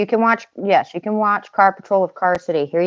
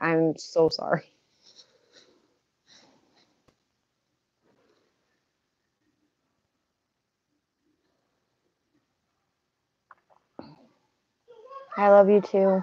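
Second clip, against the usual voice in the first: tearful, weeping, crying speech; 6 dB quieter than usual. Talking to someone they love and asking about the kids, the speaker is crying. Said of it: "I'm sorry for crying".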